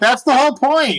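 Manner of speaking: very high, exasperated, upset tone. Telling a story about a movie, the speaker quotes a woman who got upset, imitating someone upset. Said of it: "And she got so upset".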